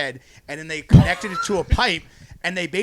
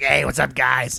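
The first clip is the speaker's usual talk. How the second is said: hoarse, raspy voice, pitched low; 5 semitones lower than usual. Imitating a guy seen leaving the Nutty Irishman at midnight, raspy voice. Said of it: "He has like this raspy voice like".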